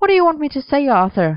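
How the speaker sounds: insistent, pressing, high and swooping. Merlin argues with his boyfriend Arthur about money, demanding. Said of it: "Merlin demanded,throwing his hands in the air".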